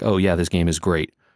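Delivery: normal talking voice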